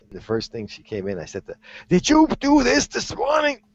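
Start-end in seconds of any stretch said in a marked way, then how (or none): 1.9-3.5 put-on yell, much higher, slower. Retelling how a frustrated woman came in, the speaker re-enacts a yelled question. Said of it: "You're yelling at me".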